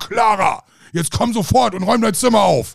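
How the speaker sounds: stern, domineering, high. Retelling a scene, speaker mimics Fräulein Rottenmeier ordering Clara, mock-domineering Fräulein Rottenmeier tone. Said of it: "die hatte ja so diesen Domina-Ton, ne? So".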